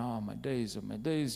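usual speaking voice

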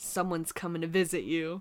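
mock-creepy delivery. Speaker acting out someone telling them they will be visited, in a mock-creepy delivery.

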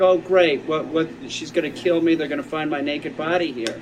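plain

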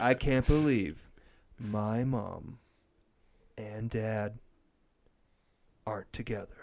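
mocking put-on TV voiceover narration voice. Mocking how he narrated his TV show: Ryan Sheckler narration impression. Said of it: "This Is How He Talked".

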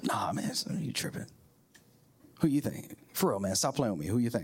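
acted whisper. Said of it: "they're kinda whispering".

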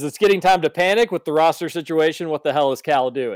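plain

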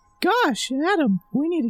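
put-on cartoon mouse voice. Giving a second try at sounding like Mickey Mouse, Mickey Mouse voice. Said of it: "Which of these two sounds more like Mickey?".

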